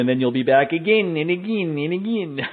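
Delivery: bad, mock Polish accent in a put-on voice. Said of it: "my bad Ioana Jędrzejczyk imitation".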